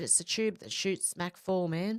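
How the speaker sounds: usual speaking voice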